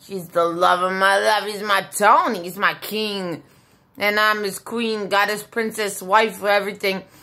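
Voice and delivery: ordinary delivery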